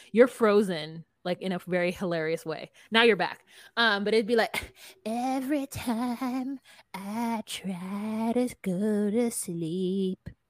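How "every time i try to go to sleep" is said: very slow drawl with stretched, stressed "try". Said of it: "That's my [name] impersonation".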